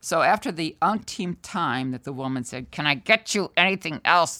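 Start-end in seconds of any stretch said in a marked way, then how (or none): 2.7-4.4 imitated speech through gritted teeth. Retelling what a woman kept asking him, imitating speaking through gritted teeth. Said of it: "through gritted teeth".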